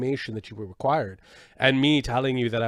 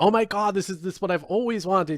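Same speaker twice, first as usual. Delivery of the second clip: put-on, effusive, starstruck fan gushing, pitched much higher; 7 semitones higher than usual. Retelling thanking her for a signed item, selling it sincerely: putting on effusive fan. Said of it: "As a true fan".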